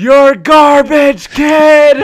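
shrill, very loud, angry, drawn-out scream. Retelling how Anthony killed a kid in an online match, retelling Anthony's scream. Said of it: "screams one more time".

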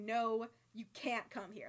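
abruptly very serious, dead serious tone. Retelling how he refused a visit on the phone: imitating a sudden serious tone. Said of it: "he gets very serious all of a sudden".

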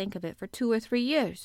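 plain

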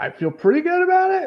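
voice rising way up.

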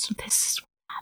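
put-on whisper. Speaker recounts whispering to Serana while explaining a story, retelling a whisper. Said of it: "I'm like whispering to Serana".

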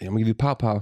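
normal talking voice

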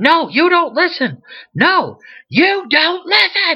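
mock very high, insistent, swooping, repeated yelling. Retelling how the man living at his house kept yelling at him, retelling someone yelling. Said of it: "he just keeps yelling at me".

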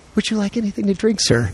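gentle, soft, slightly high half-whisper. Retelling what a flight attendant said on the plane: imitating a soft half-whisper. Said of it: "she very softly in my ear whispers".

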